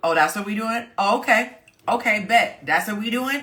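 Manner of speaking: high, sulky, passive-aggressive tone. Contrasting it with a direct complaint, the speaker acts out a mock passive-aggressive reply. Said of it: "passive aggressiveness".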